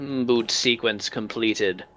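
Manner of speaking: flat, hollow metallic machine voice. Narrating a scene where a voice announces the boot sequence, hollow metallic voice. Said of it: "sort of a hollow metallic voice".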